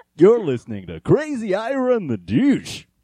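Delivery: put-on trashy radio DJ voice. After calling a voice radio trash, the speaker does a trashy radio dj voice. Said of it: "It's basically just radio trash voice".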